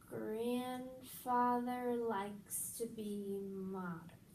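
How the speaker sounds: very slow speech, each sound drawn out. Repeating a practice sentence in a speech exercise, slowed way down. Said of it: "You slowed that speech way down".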